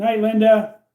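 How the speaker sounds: loud yell. Saying goodnight to a viewer who is leaving the live chat: yelling a goodnight. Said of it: "I don't know why I'm yelling at you".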